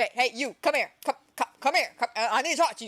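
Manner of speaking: put-on snappy, curt, snapping voice. Retelling how the boss snaps at him to come over: imitating the boss snapping at someone. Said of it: "He just snaps at him".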